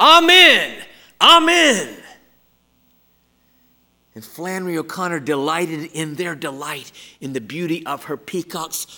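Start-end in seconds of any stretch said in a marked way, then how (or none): 0.0-2.0 high, loud, belted yell. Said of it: "plumage and yell".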